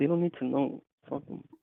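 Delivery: irritated, fed-up, pissed-off angry tone. Telling the other speaker not to tell people anything: sounding pissed off. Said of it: "I sound fucking pissed".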